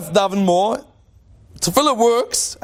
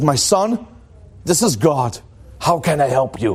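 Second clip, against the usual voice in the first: low, slow, unhurried voice; 6 semitones lower than usual. Telling a joke, voicing the answer from heaven to a desperate man: loud booming God voice. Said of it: "a loud booming voice comes out of heaven and says".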